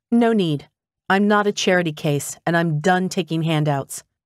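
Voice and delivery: ordinary talk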